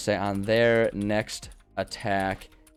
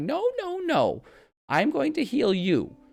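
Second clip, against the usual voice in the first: put-on very high, very slow doting old lady voice. Describing a healing item as a doting grandma: doting grandma voice. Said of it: "It's like a doting a doting parent".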